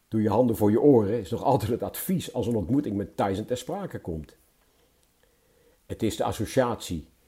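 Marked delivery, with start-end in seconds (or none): none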